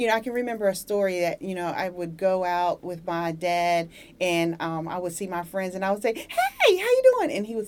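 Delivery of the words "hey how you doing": very high-pitched, eager, excited voice. Speaker recalling greeting friends while out with dad, retelling a high-pitched greeting. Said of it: "Why do you speak in that high-pitched tone?".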